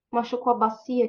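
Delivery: ordinary delivery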